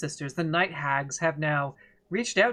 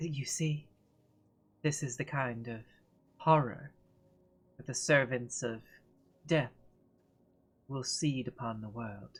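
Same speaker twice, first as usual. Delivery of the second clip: soft, low, hushed, half-whispered feminine voice; 4 semitones lower, 6 dB quieter than usual. Retelling what the patron's voice says, in a hushed feminine half-whisper. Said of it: "that whispered, hushed feminine voice that just says".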